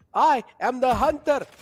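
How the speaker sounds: booming, slow, high, big delivery. Answering a request for the best Sova impression: Sova impression. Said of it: "give me your best Sova impression".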